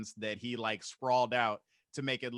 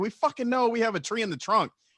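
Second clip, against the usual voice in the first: shrill, high, fed-up, angry yelling; 11 semitones higher, 8 dB louder than usual. Retelling the drive home with the tree tied on, imitating dad yelling. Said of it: "My dad's just yelling in the back".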